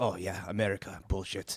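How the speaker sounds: weak, soft, bad put-on German accent. Retelling what a gentleman in Berlin said to them: put-on German accent. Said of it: "elite German accent".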